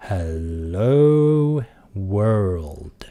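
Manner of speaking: drawn-out slow speech. Re-recording a test track, saying it even slower than before. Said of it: "let's try that even slower".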